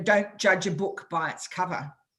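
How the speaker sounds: usual speaking voice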